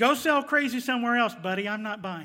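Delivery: acted, loud, dismissive, sarcastic tone. Acting out Gideon's reply to the angel: retelling a sarcastic reply. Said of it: "more sa-, sarcasm".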